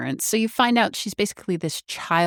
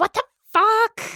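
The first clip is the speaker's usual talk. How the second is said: put-on angry outburst, higher and louder; 6 dB louder than usual. Retelling a character's reaction to her phone being thrown, imitating a freak-out. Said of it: "rightfully freak the fuck out on him".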